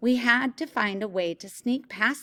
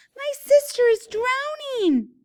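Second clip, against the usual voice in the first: very high-pitched, loud squeal; 7 dB louder than usual. Reading a story, the narrator cries for help as part of a plan: high-pitched squeal. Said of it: "I squealed in a high-pitched voice".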